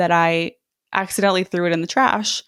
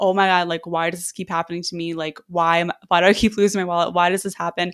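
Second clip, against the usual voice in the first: mock-crying meltdown, much faster. Speaker retells a meltdown after losing their wallet, imitating past crying. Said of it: "like crying".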